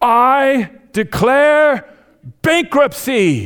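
very high, shrill, loud shout. Retelling a sitcom scene where the boss announces to the office: imitating Michael Scott shouting. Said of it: "he just shouts".

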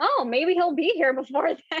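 joking, teasing tone. At the front desk, the speaker retells a remark to the staff, retelling a joking remark. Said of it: "And I jokingly said".

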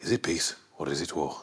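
very quiet, hushed voice with Birmingham accent. After doing Arthur, show the others you can do another one, with a Tommy from Peaky Blinders impression. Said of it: "I can do Tommy as well".

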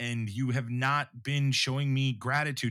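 ordinary talk

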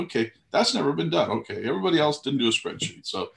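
play-acted, ironic, high, swooping sarcastic jab. Speaker retells his reply to someone's claim about having a spreadsheet, retelling a sarcastic remark. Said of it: "we're being sarcastic asses".

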